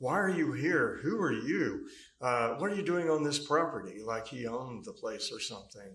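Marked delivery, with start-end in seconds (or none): 0.0-4.0 loud, mock, arrogant screaming. Recounting how Scott screamed very loudly at them, imitating Scott screaming loudly. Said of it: "Scott was screaming very loudly at me".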